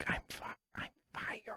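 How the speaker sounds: barely voiced, very quiet whisper. Retelling what they said to people who were confused, retelling a whisper. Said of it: "I whispered it".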